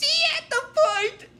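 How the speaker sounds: small, squeaky, very high-pitched robot voice. Retelling a scene from a TV episode, squeaky Destructor robot voice. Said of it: "it says in a squeaky voice".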